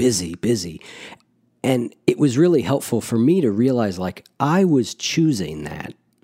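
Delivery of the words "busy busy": put-on wearily proud, half-bragging tone. Acting out how they'd answer about being busy, mock-proud, mock-weary. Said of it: "a little bit of pride and a little bit of like weariness".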